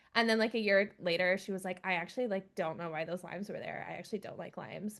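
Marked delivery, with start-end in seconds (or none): 1.9-5.0 put-on flat, deadpan delivery. Retelling what she said a year later about the limes: imitating her deadpan delivery. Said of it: "she's just so deadpan".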